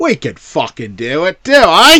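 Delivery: put-on London Cockney British accent. Voicing Hammer's reply to the Americanized Universal Monsters, Cockney British accent. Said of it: "That's a Cockney British accent".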